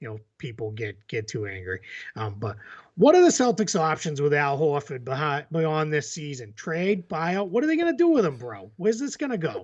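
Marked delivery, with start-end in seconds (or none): 2.4-9.6 over-the-top, exaggerated, swooping Boston accent. After warning boston listeners not to get angry, do an exaggerated boston accent. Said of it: "This is gonna be extremely exaggerated".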